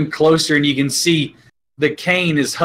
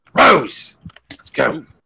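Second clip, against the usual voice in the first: sharp, barking delivery. A narrator voices a man holding the door, calling across the room: barked command. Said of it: "and he barks out".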